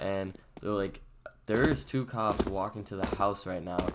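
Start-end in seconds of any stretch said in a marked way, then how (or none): none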